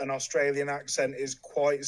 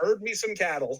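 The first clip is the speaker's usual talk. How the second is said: put-on Southern American accent, pitched up; 5 semitones higher than usual. After explaining how to pronounce cattle, speaker says the line in a Southern accent. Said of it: "You do a better Southern than me".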